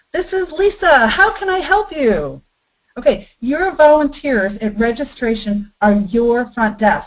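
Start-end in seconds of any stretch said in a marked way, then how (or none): 0.1-2.4 bouncy, smiling phone voice, high and swooping pitch. Acting out a woman answering a company phone, imitating a bouncy, smiling voice. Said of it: "that bounce in her voice, and you can just hear her smiling".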